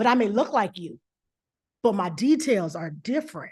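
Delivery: low, confident, self-assured, without superiority. Coaching someone to say it to the camera, confident, not superior. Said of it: "I want you to say it with a little set".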